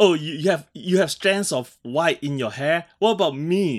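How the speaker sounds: mock needling, passive-aggressive, halting delivery. Imitating Professor X trying to convince Banshee: imitating Professor X, passive-aggressive. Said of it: "how passive aggressive was he".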